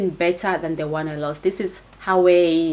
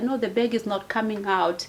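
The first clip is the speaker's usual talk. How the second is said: mock tearful, crying, pleading tone; 3 semitones higher, 4 dB quieter than usual. Retelling pleading with the gunman about the bag: retelling a tearful apology. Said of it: "crying and apologizing".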